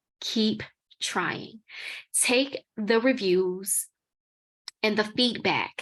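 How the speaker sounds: very slow, drawn-out, deliberate delivery. Advising listeners after describing unfunded submissions, saying it very slowly. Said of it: "I'm going to say this very slowly".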